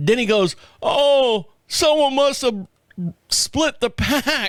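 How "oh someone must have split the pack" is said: slow, higher-pitched put-on young voice. Retelling what the young store worker said about the pack: imitating the young worker. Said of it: "I'm tired of doing the voice".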